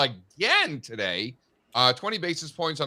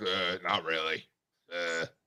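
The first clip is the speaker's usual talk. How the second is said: put-on very slow, flat, gloomy, depressed monotone; 11 semitones lower, 8 dB quieter than usual. Mimicking a co-host's flat answer about the table: imitating someone sounding depressed. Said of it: "you sound so depressed about this table".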